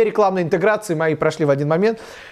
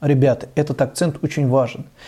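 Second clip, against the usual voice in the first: grave, weighty emphasis in a serious, lowered voice; 4 semitones lower than usual. Explaining intonation for stressing an important point: serious, pitch dropping lower. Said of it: "когда я говорю что-то серьезное, на серьезных щах ... то я ухожу чуть-чуть вниз".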